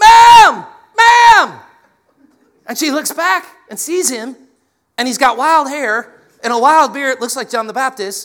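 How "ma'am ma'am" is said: very high-pitched, very loud, shrill yelling. Telling a story, the speaker acts out a man sprinting across a parking lot, retelling a man yelling. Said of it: "he starts yelling".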